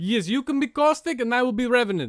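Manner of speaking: put-on, fake Russian accent. Player jokes to a friend about Apex characters, in a fake Russian accent. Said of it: "we can use our Russian accents".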